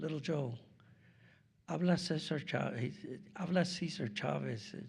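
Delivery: calm, composed voice. Speaker retelling a surprise phone call from Cesar Chavez, soft, calm voice. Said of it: "I hear this real soft, calm voice".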